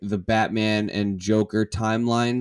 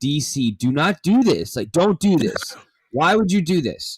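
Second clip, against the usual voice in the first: high-pitched scream held in; 7 semitones higher, 4 dB louder than usual. In their apartment, a speaker reacts to DC's plans: holding back a scream. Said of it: "I'm trying not to scream".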